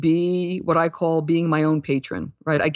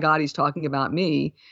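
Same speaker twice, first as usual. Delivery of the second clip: normal talking voice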